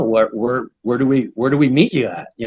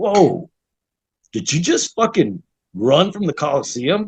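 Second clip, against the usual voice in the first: mock, awed, blown-away disbelief; 3 semitones higher than usual. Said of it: "he's just in awe".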